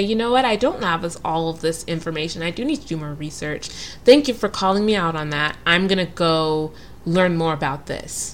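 ordinary talk, nothing marked

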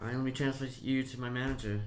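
plain

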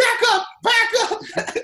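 loud screaming, stretched out. Retelling a fight where a dad calls for help: imitating someone screaming for backup. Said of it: "his dad's screaming for backup".

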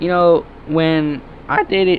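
voice cracks and breaks mid-word. Starting a story about dating, the speaker's voice cracking mid-sentence. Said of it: "voice crack, bro".

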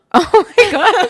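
high, loud laughing with disbelief.

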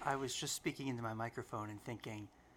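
soft, gentle public-radio announcer voice. Speaking into the microphone while thinking aloud, in a gentle NPR voice. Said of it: "this this like gentle NPR voice".

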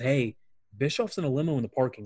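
ordinary talk, nothing marked

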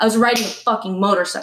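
pissed-off man's angry, cursing outburst. Retelling how a man reacted after being told he rode a bike: imitating an angry man. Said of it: "he got fucking pissed".

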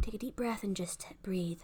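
sighing whisper on a heavy out-breath.

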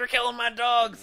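a woman's high-pitched shrieking scream. Gamer tells friends how a game character reacted to him, retelling a woman screaming. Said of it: "And she starts screaming".

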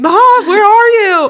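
shrill, very high, very loud full-volume scream. Speaker recalls searching Gina's house for Adeline; retelling a scream. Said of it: "I'm like screaming".

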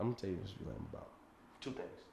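whispered, breathy, close-to-the-mic late-night radio voice. Getting real close to the mic, the speaker does a Quiet Storm radio voice. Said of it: "get real close to the mic so it sounds like".

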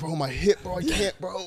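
put-on high-pitched, achy complaining like a sore fifty-year-old. Showing how a friend sounded complaining about his hip, imitating Cam complaining. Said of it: "This is how he sounded".

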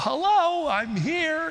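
tiny, very high, squeaky little voice. Speaker recalls a man's usual greeting, imitating Bob's high squeaky voice. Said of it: "Just that little high squeaky voice".

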